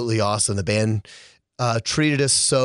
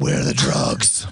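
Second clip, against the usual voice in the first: very low, deep superhero voice; 11 semitones lower than usual. On a radio show, a speaker jokes with a guest in the studio: Batman voice. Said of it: "Did you like my Batman voice?".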